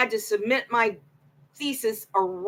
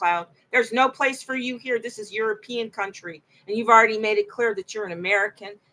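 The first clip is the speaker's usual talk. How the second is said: ordinary delivery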